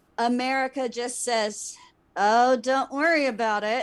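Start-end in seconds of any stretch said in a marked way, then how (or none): 2.2-3.9 mock, put-on speech through gritted teeth. Retelling how america answered the japanese attack: imitating a reply through gritted teeth. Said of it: "through gritted teeth".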